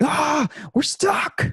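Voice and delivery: acted, piercing, shrill, very high scream. Retelling a man on a stopped train: imitating a man screaming. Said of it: "he just screams out".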